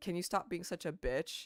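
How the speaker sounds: stern, serious, pointed no-nonsense delivery. Recounting lashing out at a woman who upset them, retelling a serious tone. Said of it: "Like in a serious tone".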